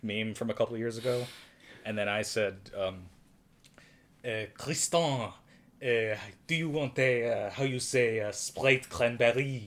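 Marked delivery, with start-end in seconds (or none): 4.2-9.7 put-on heavy, raised French accent, slowly. Retelling their own earlier joke in a stereotypical French accent: Juliette Binoche impression. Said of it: "My Juliette Binoche impression".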